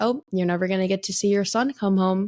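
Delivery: ordinary talk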